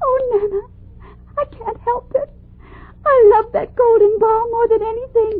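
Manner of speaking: tearful, weeping crying voice. A princess answers her nurse, who is comforting her, crying. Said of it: "Please don't cry anymore".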